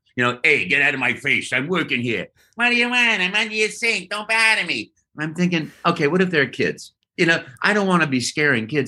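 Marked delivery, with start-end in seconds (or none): 0.5-5.0 put-on Italian-American Brooklyn accent. Speaker shows the character voice he settled on: Italian plumber from Brooklyn voice. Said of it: "Italian plumber from Brooklyn".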